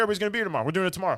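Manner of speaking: eager bossy character voice, high, loud, insistent.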